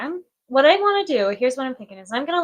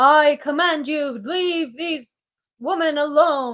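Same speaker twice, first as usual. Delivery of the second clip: slow, assumed masculine put-on voice; 4 semitones higher than usual. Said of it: "Like in a male's voice?".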